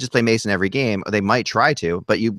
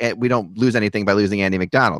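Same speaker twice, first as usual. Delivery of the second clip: ordinary talk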